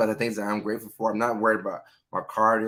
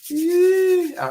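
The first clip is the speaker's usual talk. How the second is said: very high, loud, cracking voice; 7 dB louder than usual. Thanking a community member on the show, the host's voice cracks. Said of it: "my voice cracked".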